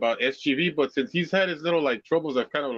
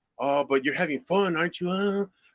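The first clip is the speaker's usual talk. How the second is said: small, creepy, ingratiating, cajoling little voice; 3 semitones higher than usual. Retelling how a man tried to win over a girl at the DMV: imitating his creepy voice. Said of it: "With his little like creepy voice that he has".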